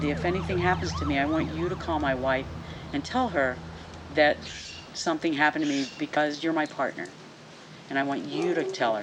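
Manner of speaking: ordinary talk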